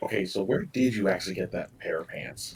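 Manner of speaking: very soft, hushed, secretive, barely there whisper. Tabletop player's character speaks to Zero, out of Varric's earshot, whispering. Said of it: "I'm going to whisper to Zero now".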